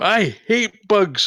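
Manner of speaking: shrill, very high-pitched battle scream. Voicing a character charging at a bug with a staff: screaming in character. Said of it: "just gonna scream".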